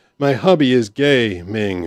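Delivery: very slow, mechanical text-to-speech voice. Recalling a message read out by text-to-speech, imitating a slow text-to-speech voice. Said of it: "when the text to speech is going really slow".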